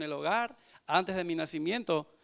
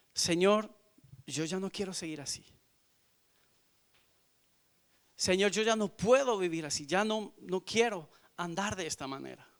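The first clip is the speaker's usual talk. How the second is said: mock tearful, drunken, crying, pleading tone; 2 semitones higher than usual. Retelling a drunken late-night prayer to the Lord: retelling a tearful prayer. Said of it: "Y llorando y llorando".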